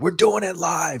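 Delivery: play-acted, high-pitched, yelled screaming outburst. Retelling a famous live TV clip of a Fox News guy: imitating someone screaming. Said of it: "started screaming".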